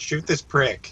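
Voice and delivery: called out, kept high in pitch. Calling out to Albert in the fight: shouting. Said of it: "I'm just gonna shout at Albert".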